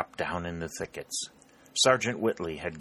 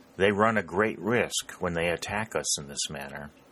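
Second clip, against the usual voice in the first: ordinary delivery, nothing marked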